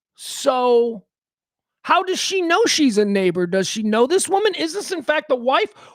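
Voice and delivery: ordinary talk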